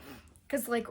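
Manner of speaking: plain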